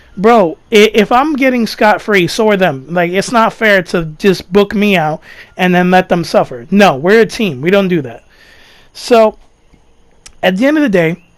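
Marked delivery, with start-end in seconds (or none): none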